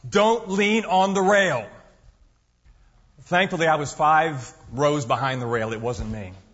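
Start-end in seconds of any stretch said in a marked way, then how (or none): 0.1-1.6 play-acted, booming, pitched-up stentorian parade-ground shout. Retelling how a marching guard stood still and shouted, in a dramatic stentorian voice. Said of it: "in a very dramatic, stentorian voice shouts".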